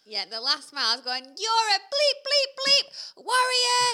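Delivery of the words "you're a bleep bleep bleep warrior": mock loud shouting, higher and louder. Retelling cheering runners in the last mile: retelling a loud shout. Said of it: "this is really loud".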